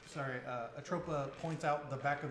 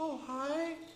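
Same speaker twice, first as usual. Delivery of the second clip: very high, silky-smooth voice; 12 semitones higher, 4 dB louder than usual. Retelling someone answering at the name, in a soft, silky voice. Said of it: "in a soft, silky voice".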